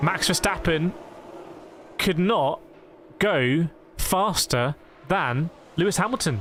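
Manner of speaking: very slow, deliberate, drawn-out delivery. Speaker reacts to a qualifying result at the Hungaroring: speaking very slowly. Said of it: "Don't know why I'm speaking so slowly".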